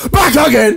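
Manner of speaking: shouting. Signing off an episode with loud mics: shouting. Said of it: "I might as well shout".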